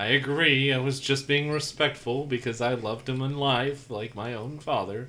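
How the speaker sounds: overly respectful, polite tone with a sarcastic edge. Answering a game master's remark in character about a late elder: sarcastic. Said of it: "I heard some sarcasm".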